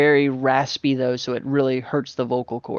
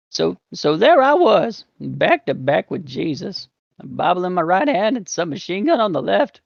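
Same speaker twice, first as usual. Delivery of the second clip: high, groggy voice with added gravel; 5 semitones higher than usual. Demonstrate the character's voice before explaining how to do it, in a groggy, gravelly Master Roshi voice. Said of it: "with Master Roshi's voice".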